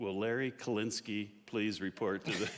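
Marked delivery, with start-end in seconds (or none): none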